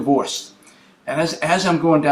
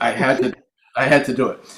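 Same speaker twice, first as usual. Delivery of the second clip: plain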